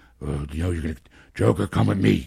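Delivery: dropped low and roughed up.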